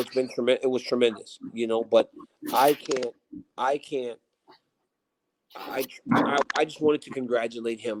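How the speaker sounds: ordinary talk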